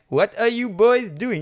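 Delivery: fake, bad German accent, very high pitched. Quoting the German guy in a scene, bad German accent. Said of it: "like Peter Sellers doing German".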